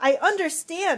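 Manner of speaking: high-pitched, loud yell. First-person narrator, grabbed by the shoulders, yells back into her face: yelled. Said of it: "I yelled right back into her face".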